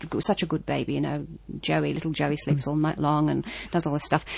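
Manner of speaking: ordinary talk, nothing marked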